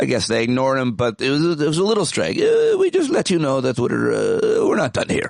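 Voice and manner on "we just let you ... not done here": put-on male voice with an Israeli accent. Voicing an Israeli guy after the airstrike news, in an Israeli accent. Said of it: "That's my Israeli guy accent".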